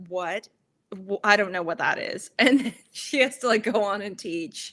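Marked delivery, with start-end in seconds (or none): 0.1-2.3 mock-bewildered, disturbed confusion, lower pitch. Retelling a teacher's reaction to a kid's fashion choice, imitating disturbed confusion. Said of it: "the anger immediately turns into like a disturbance".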